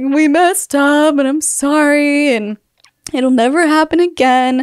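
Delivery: mock tearful sobbing voice. Retelling apologizing to the bishop in his office, re-enacting talking through sobs. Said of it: "I tell him through my sobs".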